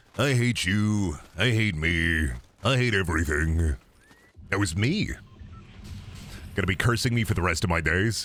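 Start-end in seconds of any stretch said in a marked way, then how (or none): 0.2-3.8 deep, low, very slow voice, every word drawn out. Voice actor demonstrating the character they voiced for a toy, in Terraria skeleton voice. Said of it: "that's the Terraria skeleton voice".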